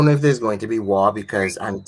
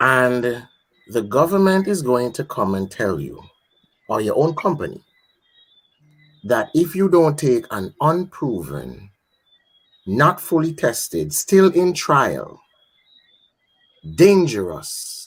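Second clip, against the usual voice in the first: slow, measured, careful delivery, weighing every word; 4 semitones higher than usual. Guest on a program, speaking slowly and deliberately and carefully. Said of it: "let me speak slowly and deliberately and carefully".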